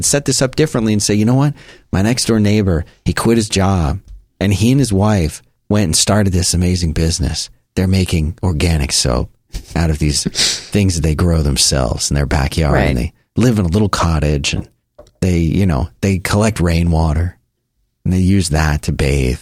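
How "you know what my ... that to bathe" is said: put-on movie voiceover narrator voice. Telling a story about a neighbor's business: Alec Baldwin impression. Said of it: "that was my Alec Baldwin, uh, Royal Tenenbaums impression".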